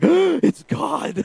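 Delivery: very high, shocked, stunned outburst. Retelling realizing a sign from god on a plane: retelling a shocked gasp. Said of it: "I about fell out of my chair".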